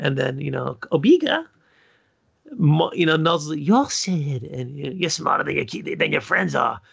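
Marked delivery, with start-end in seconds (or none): 3.6-6.7 put-on cartoon woman voice. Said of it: "She sounded like the chick from, uh, Monsters, Inc".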